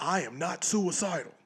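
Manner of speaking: small, contained, mild, toned-down scream. Retelling what a convicted man kept screaming: retelling a scream. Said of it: "he's screaming".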